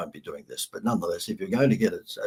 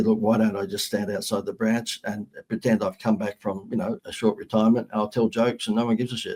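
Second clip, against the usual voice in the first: ordinary talk, nothing marked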